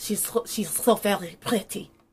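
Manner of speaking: bad, fake German accent. Hosts try phrases in German-accented English for fun: bad German accent. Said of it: "that was worse".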